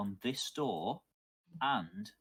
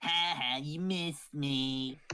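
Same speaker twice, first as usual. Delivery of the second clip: little imp creature voice, high and taunting; 5 semitones higher, 3 dB louder than usual. Game master voicing an imp after a player's attack misses, imp voice. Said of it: "you hear the imp's voice go again".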